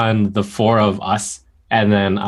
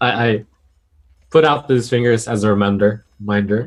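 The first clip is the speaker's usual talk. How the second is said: ordinary talk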